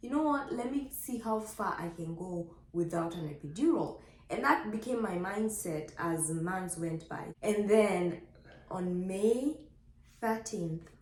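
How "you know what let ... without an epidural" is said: plain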